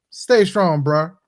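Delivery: dry, mocking tone. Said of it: "he sarcastically told this guy".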